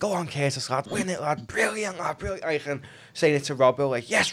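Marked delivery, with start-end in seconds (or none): 0.0-2.0 acted-out shouting, pitched much higher. Describing how the captain shouts to teammates on the pitch, retelling a captain's shouting. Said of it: "he's shouting like".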